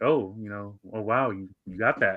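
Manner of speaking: sarcastic, feigned amazement, fake-impressed. Retelling how Linda reacted to a story: imitating Linda's sarcastic tone. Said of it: "she was sarcastically".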